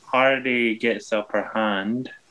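very slow, each word dragged out one by one. Calling a wrestling match moment for others, the commentator says it very slowly. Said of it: "I don't know why I said that so slowly".

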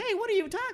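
very high cartoon voice with cartoon-style inflections. Imitating an actor who sounds like a cartoon: imitating a high-pitched cartoonish voice. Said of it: "with the high pitch".

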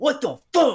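enraged, high-pitched, furious screaming outburst. Retelling missing a paper towel shot at the trash can, re-enacting a furious scream. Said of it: "So I was screaming".

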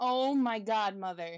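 normal talking voice

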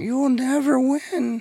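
terrible put-on voice, pitched way up. Recalling Undertaker's glory days with friends: terrible Paul Bearer impression. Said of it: "that voice is terrible".

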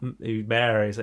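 normal talking voice

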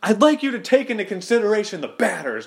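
pretend shouting. Imagining a character yelling at the umpire, mock yelling at the umpire. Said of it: "yelling at the ump and saying".

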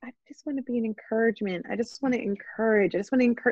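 gentle, tender tone. Quoting what Michelle Duggar always says on TV: tender soft Michelle Duggar voice. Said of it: "the tenderest, softest voice".

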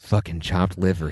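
whispering. Retelling what a man whispered into Michael Peterson's ear, retelling a whisper. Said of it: "He whispers that into Michael Peterson's ear".

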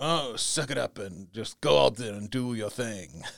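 attempted British English accent. Asking a guest whether their older parents told them to just go do it, attempted british accent. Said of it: "thanks for trying the British accent".

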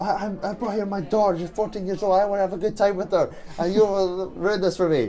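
high-pitched, angry, scolding yell. Retelling how a woman near a scuffle yelled at the people: retelling a woman yelling. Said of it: "started yelling at them saying".

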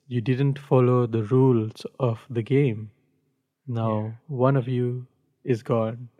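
normal talking voice

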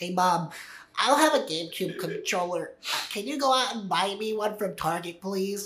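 put-on nerdy kid voice.

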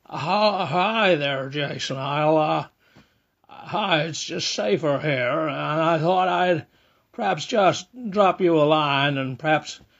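bad put-on American accent. Leaving a phone message for the host: terrible Jimmy Stewart impression. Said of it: "my just terrible Jimmy Stewart impression".

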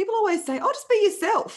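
put-on strong Australian accent, very high pitch. Quoting a line from a favorite TED Talk, sounding really Australian. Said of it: "I sounded really Australian when I said that".

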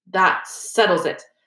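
victorious, triumphant, declaring tone. Narrator reading a character's line to his friends, triumphant voice. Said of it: "said Ron in a triumphant voice".

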